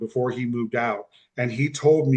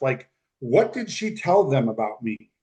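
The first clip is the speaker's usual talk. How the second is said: plain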